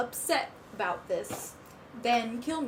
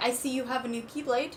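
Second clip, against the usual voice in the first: normal talking voice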